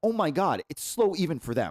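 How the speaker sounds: ordinary delivery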